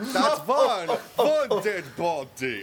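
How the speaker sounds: high-pitched, laughing put-on character voice.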